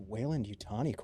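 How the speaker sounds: muttering under breath. Voicing a character reacting to a name on a screen, muttering under his breath. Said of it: "mutter under his breath".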